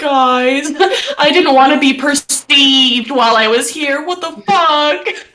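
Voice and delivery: high, slow sobbing speech, crying through words. Voicing a wounded character crying on the floor: crying while talking. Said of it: "crying on the floor, and he's like".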